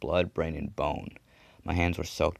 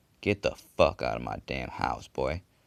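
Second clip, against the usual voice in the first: low, menacing, threatening tone; 4 semitones lower than usual. A man aiming a revolver at the narrator at his door, threatening tone. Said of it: "the man said in a threatening tone".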